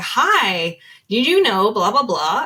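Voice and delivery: put-on American accent with drawn-out "hi". Retelling a business video where a robotic-looking woman speaks: imitating an american accent. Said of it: "had an American accent and was like".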